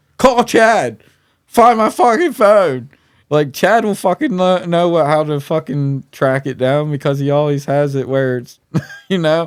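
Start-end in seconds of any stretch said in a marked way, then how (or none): 0.2-5.1 shrill, very high, panicked, frantic screaming. Retelling screaming at a companion about a lost phone, re-enacted screaming. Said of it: "I'm sitting there screaming at him".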